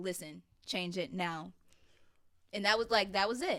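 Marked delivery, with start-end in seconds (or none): 0.0-1.5 stern, strict tone. Retelling what a musician told you about changing your major: imitating Phil's stern order. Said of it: "he was very stern about it".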